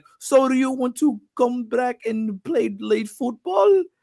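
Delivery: put-on slow, drawling, high-pitched Brazilian accent. Retelling Gisele asking about coming back to play: Gisele Bündchen voice, Brazilian accent. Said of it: "so she gotta do the accent".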